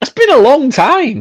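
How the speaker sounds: high, slow, mock-dramatic voice.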